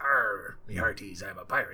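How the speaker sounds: low, put-on pirate character voice. Showing how they play to type when it's a pirate, put-on pirate voice. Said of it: "I do try to do different voices... So if it's a pirate, he's".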